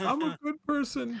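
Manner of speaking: put-on very high, drawn-out, weepy, tearful little-kid voice. Retelling a young daughter's protest after she started crying: imitating a crying child. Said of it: "she started crying".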